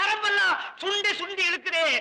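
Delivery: high-pitched wailing. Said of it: "ஏங்க இப்படி அலற?".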